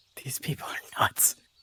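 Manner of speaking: whispering quietly. In character, telling Fern about the others: quiet whisper. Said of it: "quietly whispers to Fern".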